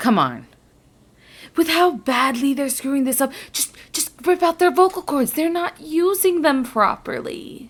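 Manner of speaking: menacing stage whisper. Voicing a beast that urges a player to do horrible things: half-whispering menacingly. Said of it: "He's just whispering into your ear".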